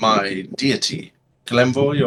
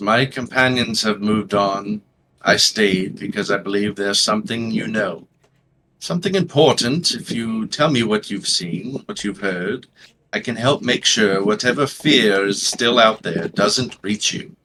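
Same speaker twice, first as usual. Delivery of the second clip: level voice, flat, no expression at all; 2 semitones lower than usual. Retelling what he said while waiting at her door, in a flat, expressionless voice. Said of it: "not much expression in his voice as you can hear".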